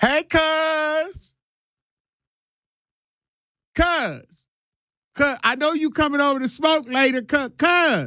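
each cuz stretched out, slow and high-pitched. Doing an impersonation of parents on Facebook Live: impersonating a Facebook Live streamer. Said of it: "this is my impersonation of people that go on Facebook Live".

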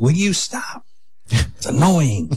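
high, teasing voice, mocking in manner. Making fun of the speaker's wife, who hates it: imitating wife's voice. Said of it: "like doing those voices, just making fun of my wife".

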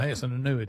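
ordinary talk, nothing marked

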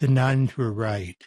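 low-key, gentle, grave deadpan delivery. Retelling an answer given to an audience member's question: soft voice. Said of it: "in a soft voice".

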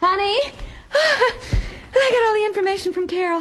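out of breath. In a radio comedy, one of the couple tells the other the news, out of breath. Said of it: "I'm out of breath".

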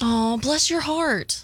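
reassuring, encouraging, supportive tone. In a party game, saying the set phrase with the assigned emotion, supportive.

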